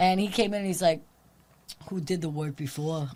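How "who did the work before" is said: put-on Staten Island accent. Retell what the guy asked when he came in, in a classic Italian Staten Island guy voice. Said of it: "your classic like Italian like Staten Island or Long Island".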